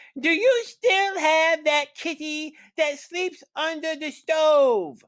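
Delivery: very high, cackling little troll voice. A storyteller reads the littlest troll calling out to Kiri, high, cackly troll voice. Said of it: "he called in a high, cackly voice".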